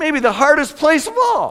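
very high voice cracking mid-line. Preaching that making room can work even in churches, voice cracking. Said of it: "My voice just cracked".

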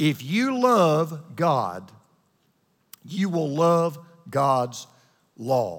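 said really slow, deliberate delivery.

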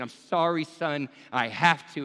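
put-on, loud, slow voice through tears. Acting out a father apologizing while binding his son: acting out Abraham's tearful apology. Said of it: "tears as well".

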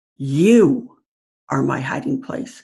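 opening word you heavily stressed. Reading a short example line, emphasizing the first word: stress on you. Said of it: "I'll start out with emphasizing the first word".

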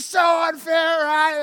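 put-on high, indignant, angry teen voice. Acting out a grounded child's reaction, imitating an angry teenager. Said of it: "Anger, stage one".

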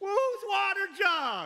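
put-on taunting shout, high and projected far. Retelling David calling out to the army from a hill: acting out a shout. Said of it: "David wakes up the army with his voice".

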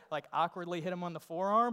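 ordinary delivery

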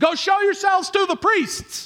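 shrill, very high-pitched shouted voice. Telling a Bible story, the speaker acts out the reply to the lepers: retelling a yell back. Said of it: "he yells back".

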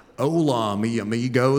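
put-on heavy Western American accent on Spanish words. Showing how Steve talks Spanish, in his thick Western American accent. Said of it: "he has this thick Western American accent".

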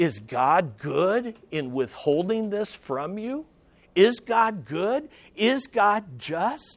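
put-on tempter whisper. Preaching about the devil as a liar: imitating the devil whispering. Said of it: "He whispers".

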